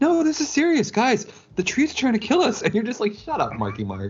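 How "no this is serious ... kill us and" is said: very high pitch, totally earnest and insistent. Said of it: "he gets really, really high-pitched".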